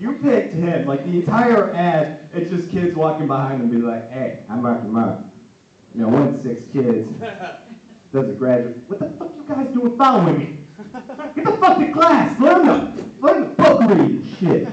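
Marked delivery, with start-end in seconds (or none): 4.1-14.7 animated, swooping, profane, scolding rant. Acting out an ad where kids follow Mark Wahlberg: Mark Wahlberg impression. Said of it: "that Mark Wahlberg impression".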